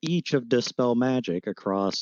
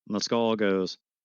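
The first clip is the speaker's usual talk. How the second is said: ordinary delivery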